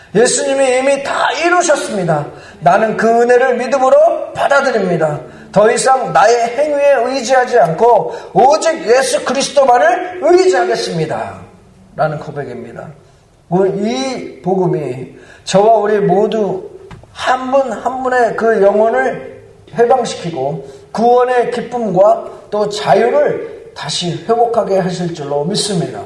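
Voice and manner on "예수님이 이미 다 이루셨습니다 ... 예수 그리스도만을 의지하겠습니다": bold, high-pitched, declaring tone. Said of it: "십자가 앞에서 다시 선포하시기 바랍니다".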